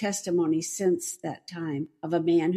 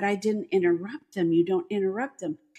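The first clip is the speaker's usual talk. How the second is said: ordinary talk, nothing marked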